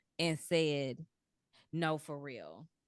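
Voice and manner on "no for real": earnest, low, firm, serious tone. Retelling refusing a man a second time: retelling own serious tone. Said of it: "took a different tone".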